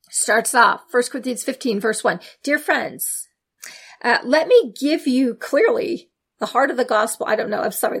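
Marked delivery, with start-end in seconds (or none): 2.4-7.2 mocking, ironic, sarcastic reading. Reading a scripture verse aloud to listeners: sarcastic reading.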